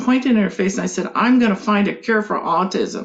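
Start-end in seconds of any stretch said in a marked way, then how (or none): 1.1-3.1 firm, play-acted mild half-yell. Retelling pointing in a doctor's face and vowing: retelling a yell. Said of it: "I stood up and yelled at her".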